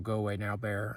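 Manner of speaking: ordinary talk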